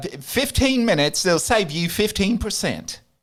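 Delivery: put-on British-accented commercial voice. Trying out an advertising voice for the others: Geico ad British accent. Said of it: "Try that, my British accent".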